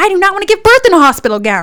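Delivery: shrill, high, loud, stubborn, defiant yell. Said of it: "so I'm yelling at them".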